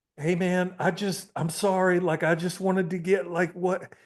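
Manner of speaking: mock desperate pleading in a high voice. Retelling how a man reacted when confronted: imitating someone begging. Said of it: "he was begging".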